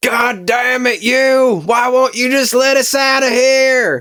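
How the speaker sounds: very high, slow, drawn-out angry yell. Unable to get out, he looks up and is yelling angrily at the sky. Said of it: "stop yelling".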